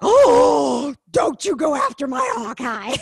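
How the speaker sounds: acted aghast, slow, horrified tone. Speaker recalling their reaction when he came at Hawkeye, retelling a horrified reaction. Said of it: "you could hear the horror in my voice".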